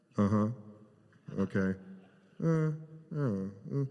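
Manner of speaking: very slow, unengaged, put-on monosyllabic uh-huh grunts. Retelling how Bill sat unengaged during the pitch: imitating flat monosyllabic replies. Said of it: "just monosyllabic".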